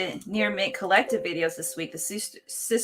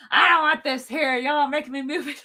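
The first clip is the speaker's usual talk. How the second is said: acted-out sulky, whiny, higher complaining holler; 6 semitones higher than usual. Mocking the co-host's reaction to a rearranging live stream, mock pouty yelling. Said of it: "pout and yell the whole time".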